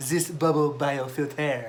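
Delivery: put-on French-accented speech. Reading out a funny product name, in a put-on french accent. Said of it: "I had to read it in my best French French accent".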